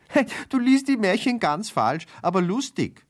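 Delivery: very high, delighted, happy giggling voice. Narrator voicing a listener interrupting the fairy-tale reading, giggling happily. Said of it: "Sabine kicherte vergnügt".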